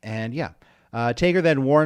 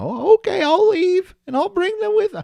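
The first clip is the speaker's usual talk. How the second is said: very high, loud, loose cartoon slacker voice; 5 dB louder than usual. Playing Mankind's reply in a retold exchange, Mankind impression sounding like Shaggy. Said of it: "my mankind sounds like Shaggy".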